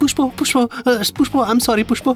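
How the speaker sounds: whiny fake crying. Showing someone how to apologize properly, in whiny fake crying. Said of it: "নেকা কান্না কাঁদ ... এই টোনটা একদম ঠিক আছে".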